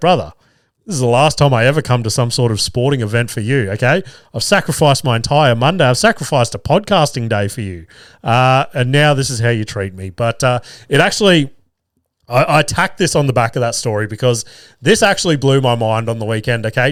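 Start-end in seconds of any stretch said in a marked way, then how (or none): none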